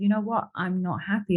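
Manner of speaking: ordinary talk, nothing marked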